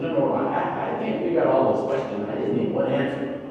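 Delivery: ordinary delivery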